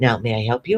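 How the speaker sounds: hushed, quiet, gentle, calm voice. Retelling greeting a table as a waitress: retelling in a quiet voice. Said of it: "my voice goes down, it goes quiet".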